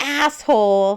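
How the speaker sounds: loud, drawn-out yell.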